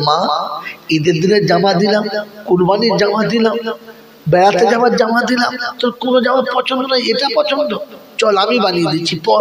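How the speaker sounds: high, rising, tearful pleading tone.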